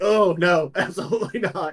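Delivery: acting about to throw up. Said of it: "you're smelling the liquor on the verge of throwing up".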